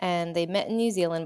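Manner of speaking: plain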